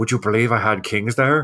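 stage whisper, loud. Retelling how a player spoke to his neighbor after the hand: imitating Phil's loud whisper. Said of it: "he whispers loudly to his neighbor".

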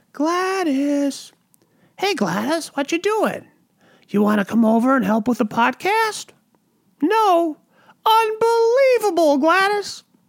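high cat voice. On a podcast, showing how they talk to their cat, in a cat voice. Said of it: "I use my cat voice".

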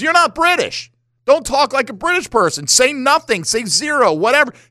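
animated, high-pitched impression.

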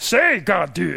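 low-pitched, creaky sage voice. Imagining a famous character reading scripture aloud: Yoda voice.

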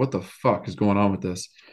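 ordinary delivery

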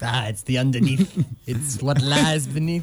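put-on Italian accent. Joking with a friend about French people: put-on Italian accent. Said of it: "I was doing the Italian".

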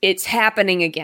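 plain

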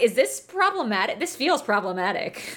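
ordinary delivery

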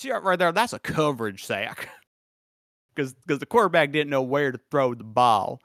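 put-on cartoon rooster voice. Commenting on a football play, doing a Foghorn Leghorn voice. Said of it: "Why is Foghorn Leghorn telling me about that?".

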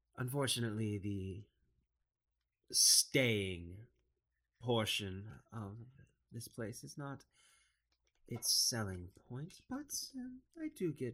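put-on swooping drow woman voice. Game master voices a drow woman at the tavern counter, in a drow woman voice. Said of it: "uh, a drow woman sitting, sitting, uh, behind the counter. She has, uh, very noble looking clothing".

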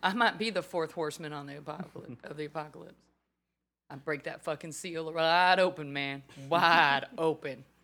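put-on Texas accent. Podcast host joking about cowboy boots, doing a put-on texas accent. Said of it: "with my Texas accent".

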